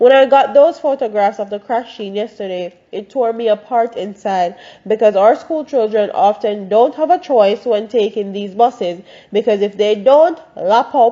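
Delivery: normal talking voice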